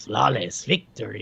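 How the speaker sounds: low, slow, hammy, cheesy villain voice.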